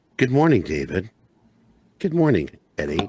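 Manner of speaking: calm, soothing computer voice. Joking about a soothing login voice, a speaker does a soothing HAL 9000 voice. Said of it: "it's like Hal three thousand".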